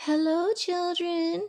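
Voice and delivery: sugary-sweet, high-pitched voice. Reading a story aloud, someone greets the children: sweet voice. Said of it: "someone said in a sweet voice".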